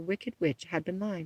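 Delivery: ordinary delivery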